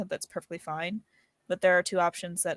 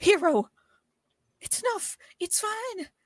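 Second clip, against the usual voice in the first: very high, shrill, put-on character shout; 14 semitones higher, 4 dB louder than usual. Voicing a character who stops a friend's spell: shouting in character. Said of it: "I think just shouts".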